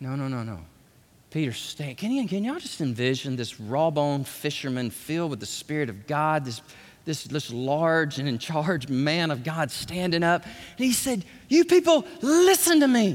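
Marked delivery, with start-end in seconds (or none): 11.5-13.2 loud, high-pitched delivery. Retelling Peter preaching to the crowd: acting out Peter's raised voice. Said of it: "The Bible said he raised his voice".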